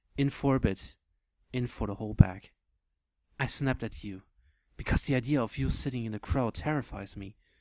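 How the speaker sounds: ordinary delivery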